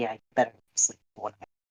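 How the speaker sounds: whispering in a put-on voice. Voicing Moss warning Alexander privately: whispering in character. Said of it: "Moss just whispers to Alexander".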